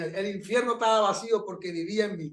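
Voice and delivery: plain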